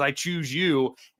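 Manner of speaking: put-on demonic voice. Speaker recounts a moment in a horror film: demonic voice. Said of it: "this demonic voice says".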